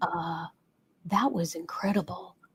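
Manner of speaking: soft, hushed speech. Retelling what men said after their first yoga session: imitating someone speaking quietly. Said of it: "they would come up to me very quietly and say".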